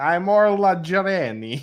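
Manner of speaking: put-on very heavy Eastern European accent. Imitating how an audiobook narrator voices a character, do a very Eastern European Orla Jareni voice. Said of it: "goes very like Eastern European".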